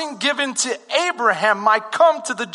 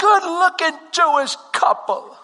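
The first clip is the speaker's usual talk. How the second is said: put-on New York accent, pitched up; 6 semitones higher than usual. Telling a story, the speaker quotes the deli lady greeting them in a new york accent. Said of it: "In this New York accent".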